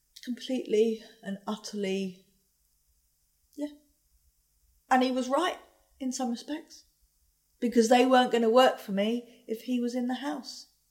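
voice close to crying, on the verge of tears. A mother recalls having her son removed from the house, about to cry. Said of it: "Sorry, I'm going to cry".

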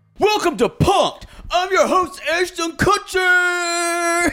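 very high-pitched showbiz host voice, one word drawn out. Speaker introduces a prank show as its host: Ashton Kutcher voice. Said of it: "That's my best Ashton Kutcher I can do".

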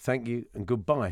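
ordinary talk, nothing marked

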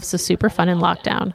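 ordinary delivery

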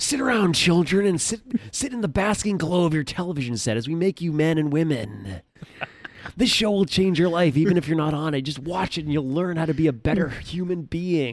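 unhinged, high-pitched host voice. Saying what Jeff is like now: imitating Jeff, insane. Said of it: "He's insane".

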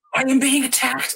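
acted shrill angry outburst. Retelling how a woman in a park blew up at a man. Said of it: "and she blew up".

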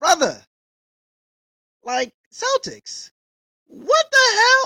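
very high, very loud, shrill incredulous outburst. Reacting to Jaylen Brown's contract, the speaker's voice rises in disbelief. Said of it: "sorry that my voice is going there".

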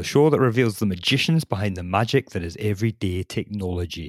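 put-on Scottish accent.

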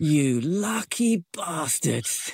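put-on shouting in a man's voice. Retelling what a guy on a bike said riding past: imitating a man shouting.

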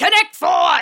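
shrill, very high, loud yell. Pitching a Connect 4 movie, imagining its star yelling: yelled Al Pacino voice. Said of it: "yelling, ... In the Al Pacino voice".

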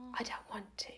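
very small, little voice. Retelling a moment in the shower with a man, teeny tiny voice. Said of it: "this teeny tiny little voice came out".

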